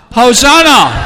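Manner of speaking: loud, drawn-out high shout.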